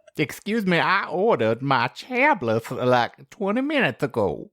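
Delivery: slight Southern accent. Voicing a possum complaining about a late wine order: slight Southern accent. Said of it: "can you throw a slight Southern accent onto that?".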